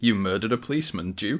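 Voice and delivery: ordinary talk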